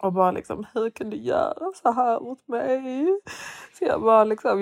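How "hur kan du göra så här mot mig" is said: put-on drunken crying, much higher. Retelling her own words in a taxi on the way home, imitating drunk crying. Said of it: "Jag typ gråta i taxin".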